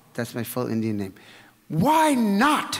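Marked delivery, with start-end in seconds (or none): 1.7-2.8 put-on stern voice pitched very high. Retelling a teacher's answer to a question: imitating a stern reply. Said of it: "she looked at me rather sternly".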